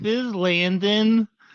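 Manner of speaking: meek feeble high voice. Mocking a voicemail greeting by imitating Landon sounding weak. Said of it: "you sound weak. You sound like a pushover".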